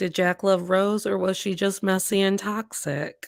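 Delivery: ordinary talk, nothing marked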